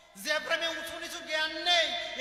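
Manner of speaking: fervent, loud, slow, impassioned preaching delivery.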